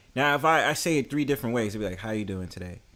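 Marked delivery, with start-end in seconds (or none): 2.0-2.8 low, quiet, sad, downcast, don't-bother-me tone. Speaker demonstrating how tone changes a phrase's meaning: sad, unenthusiastic. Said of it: "you sound like you're sad or you don't really want to be bothered".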